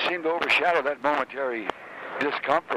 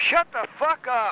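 put-on yell at a very high pitch; 10 semitones higher than usual. Recalling being locked away, repeating what the guys yelled back, retelling the yell. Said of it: "guys yelling back".

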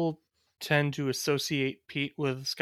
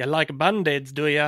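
loud, terrible fake Irish brogue; 7 dB louder than usual. Attempting a Scottish accent that comes out as a bad Irish accent. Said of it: "like a shitty Irish accent".

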